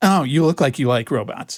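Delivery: mock, put-on judgmental, disapproving tone. Repeating what a woman said to a kid, imitating her judgy tone. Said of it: "You can hear her judgy, cunty tone".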